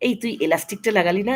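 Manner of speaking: plain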